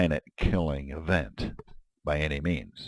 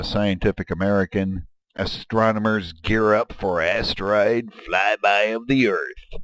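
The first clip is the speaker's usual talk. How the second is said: grand, thrilling, slow, excited announcer voice; 4 semitones higher, 4 dB louder than usual. Reading a Scientific American headline aloud: exciting announcer voice. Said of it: "That's my exciting announcer voice".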